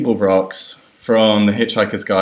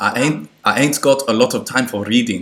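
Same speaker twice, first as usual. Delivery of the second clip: loose, approximate South African accent. Reading the quiz quote for question seventeen in a kind of south african accent. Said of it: "That's a kind of South African accent".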